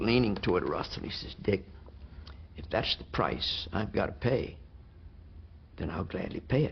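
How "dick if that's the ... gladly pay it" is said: soft, hushed, near-whispered voice. Retelling what the President said to Russell, in a soft voice. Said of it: "in another soft voice".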